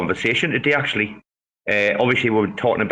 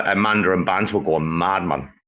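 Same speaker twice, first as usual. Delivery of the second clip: ordinary talk, nothing marked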